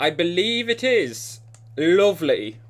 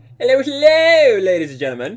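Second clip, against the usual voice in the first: goofy put-on voice, high and loud; 7 semitones higher, 7 dB louder than usual. Opening a live stream, greeting the audience in a put-on voice. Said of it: "I have no idea why I did that voice".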